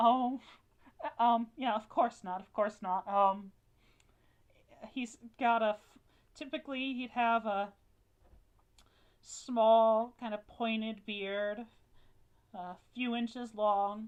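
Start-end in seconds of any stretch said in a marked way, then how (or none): 0.0-3.1 awkward, hesitant, embarrassed, flustered tone. Game narrator voicing a woman who turns to the player, speaking with embarrassment. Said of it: "covers her hands with embarrassment".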